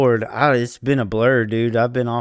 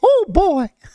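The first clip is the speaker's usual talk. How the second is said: squeaked out at very high pitch; 4 dB louder than usual. Asked to talk like Mickey on the podcast, in a Mickey Mouse voice. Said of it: "talk like Mickey".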